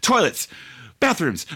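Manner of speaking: frantic, game show–style guessing.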